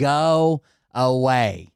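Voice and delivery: put-on panicked screaming yell. Retelling trying to warn someone off, the speaker imitates a panicked scream. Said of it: "in a full fucking panic, screaming".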